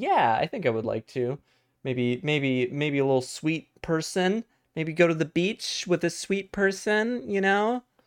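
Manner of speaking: high, fake put-on girly voice. Speaking on a call, in a put-on girl voice. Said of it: "it's just my girl voice".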